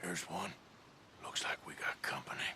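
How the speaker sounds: very quiet, hushed, barely voiced whisper. Arthur Morgan hushes Albert Mason, then speaks in a whisper.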